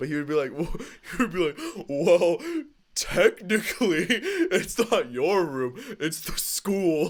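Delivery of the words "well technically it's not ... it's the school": dumb, dopey put-on voice, pitched up, slow. Recalling what a man would say, mocking him in his dumb voice. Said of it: "his like dumb voice".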